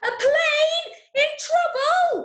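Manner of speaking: booming, very loud, very high, very slow delivery. Showing listeners different ways to say a radio drama line; really loud. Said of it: "Or you might say it really loudly".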